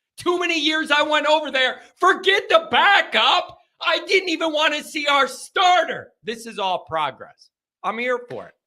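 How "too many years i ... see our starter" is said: yelling with excitement, high pitched. Talking about the team's players he wants to watch, the speaker is excited yelling. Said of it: "sorry about the yelling".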